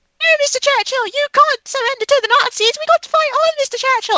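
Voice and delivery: put-on hammy, loud, very high cockney accent. Recounting passengers on the Underground in a movie scene, in a put-on accent. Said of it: "I don't know why I'm doing that accent".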